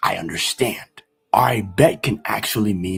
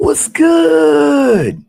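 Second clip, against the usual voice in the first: eager, excited, very high and very loud; 10 dB louder than usual. Showing how one phrase changes meaning with tone, say it really excited. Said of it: "really excited".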